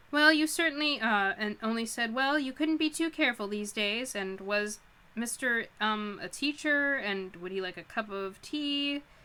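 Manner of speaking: ordinary talk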